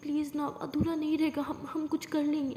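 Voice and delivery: ordinary talk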